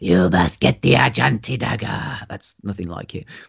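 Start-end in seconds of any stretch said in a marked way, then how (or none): 0.0-2.3 put-on rough, creaky, throaty voice. Imitating a film actor's line while admitting they can't do it: throaty film-voice impression. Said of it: "he's just this really throaty sort of like".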